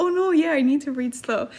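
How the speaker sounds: ordinary delivery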